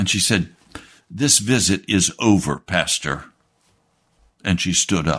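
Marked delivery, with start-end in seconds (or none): 1.1-3.2 play-acted furious voice, firm and final. Retelling the church member ending the visit: imitating someone furious. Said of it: "she just totally lost it".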